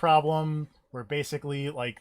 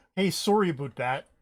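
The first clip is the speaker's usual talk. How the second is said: put-on Canadian accent, pitched up; 4 semitones higher, 3 dB louder than usual. Imitating a game character who sounds incredibly Canadian: Star-Lord imitation, Canadian accent. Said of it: "there is a point where Star-Lord just goes like".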